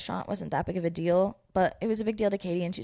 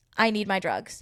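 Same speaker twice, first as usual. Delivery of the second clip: normal talking voice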